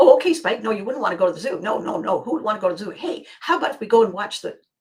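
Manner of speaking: loud, bouncy, mock-eager puppy-like chatter. Acting out the eager one answering a refusal: eager bouncing puppy. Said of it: "bouncing Chester Abbey jumps up and says".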